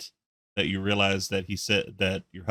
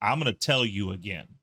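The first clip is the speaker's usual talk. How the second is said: acted snappy delivery. Retelling a wrestling locker-room scene: imitating Jimmy snapping back. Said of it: "Jimmy snacks back".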